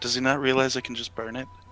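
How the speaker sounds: hushed whispering. In a tabletop game, a player's character whispers to a fellow character. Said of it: "I'm gonna whisper over to Wildheart".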